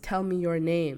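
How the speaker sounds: ordinary delivery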